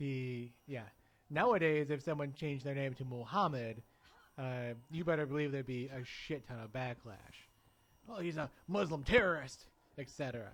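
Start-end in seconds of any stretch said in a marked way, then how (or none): 8.1-9.6 loud, put-on Southern accent. Speaker voices imagined backlash from other people, in a put-on Southern accent. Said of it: "I don't know why we both use southern accents for that".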